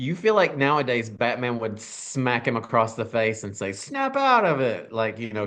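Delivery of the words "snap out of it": very high, slow, deliberate, drawn-out rebuking tone. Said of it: "Cher Moonstruck style".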